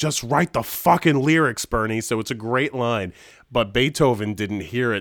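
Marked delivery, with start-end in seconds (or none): 0.0-2.0 restrained, mild shout. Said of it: "they're yelling at each other".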